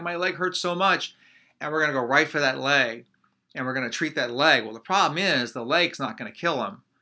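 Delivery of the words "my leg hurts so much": put-on, high, pained crying out. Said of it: "He's crying".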